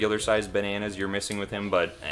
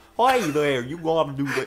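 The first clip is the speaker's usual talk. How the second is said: imitated New Jersey accent; 7 semitones higher, 5 dB louder than usual. A speaker imitates the way the people being discussed talk, New Jersey accent. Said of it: "that's the kind of voice that they have".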